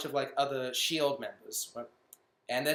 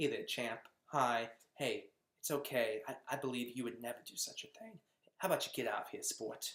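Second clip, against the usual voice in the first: super friendly, easygoing, reassuring, comforting voice; 3 semitones lower, 8 dB quieter than usual. Retelling how a hero reassures a scared boy: imitating Captain America being very friendly. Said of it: "he's just being the friendliest guy ever".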